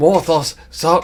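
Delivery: loud, high-pitched hollered yell. Calling out to Morthos to stop, yelling. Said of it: "I'm yelling again".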